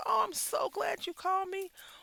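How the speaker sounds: very high, thrilled, gushing, excited tone. Describing a call where the other person is thrilled: imitating an excited caller. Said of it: "they're excited that you called them".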